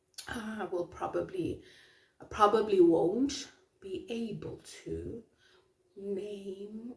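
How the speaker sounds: slow, measured, deliberate talking, one word drawn out. Trying to recall who said something, talking slowly. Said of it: "Why am I talking slowly now?".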